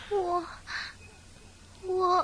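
tearful. Stammering when asked her name and where she came from: crying. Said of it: "你怎么哭了？".

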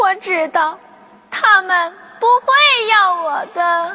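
weeping, tearful voice. Told not to cry and promised the aunt's home, answering while crying. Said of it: "别哭，".

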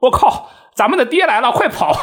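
very high, shrill, all-out shouting. Recounting yelling in voice chat to divert attention, retelling own yelling. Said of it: "我就在语音里大喊大叫".

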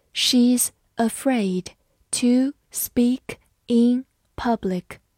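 slow, careful reading voice.

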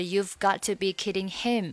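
ordinary delivery

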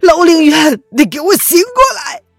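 roaring in anger, tearful. Ye Xuanhan at Ling Yuan's bedside, roaring furiously in tears. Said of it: "叶轩寒怒吼道，他的泪意已经止不住了".

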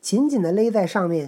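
ordinary delivery

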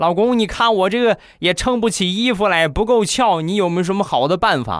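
whiny, high-pitched complaining tone.

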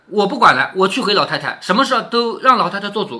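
ordinary talk

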